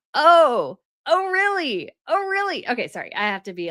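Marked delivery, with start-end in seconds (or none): 0.1-2.6 very high, very slow, swooping sarcastic sing-song. Reacting to their claim of a close royal relationship, sarcastic. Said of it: "a little sarcastic here".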